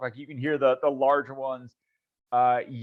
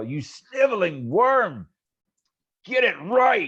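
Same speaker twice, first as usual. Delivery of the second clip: cruel, swooping, drawn-out, pitched-up screaming; 7 semitones higher than usual. Voicing a half-dragon that kicks a kobold across the room: screaming. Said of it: "and just scream, you know, and just yell".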